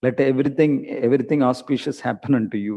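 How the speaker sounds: ordinary talk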